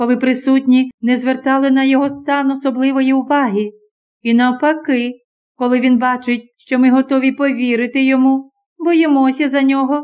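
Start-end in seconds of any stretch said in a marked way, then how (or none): none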